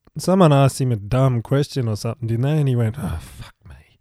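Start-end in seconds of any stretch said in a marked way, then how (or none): 3.0-3.8 much quieter, lower, slower mutter. Retelling a man's reply to a dumb question: muttered under his breath. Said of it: "Like that under his".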